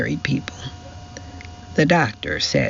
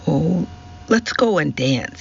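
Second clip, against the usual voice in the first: plain reading voice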